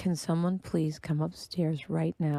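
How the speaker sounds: put-on, very quiet voice. Retelling paging people in the house instead of yelling, speaking very quietly. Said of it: "And I very quietly say".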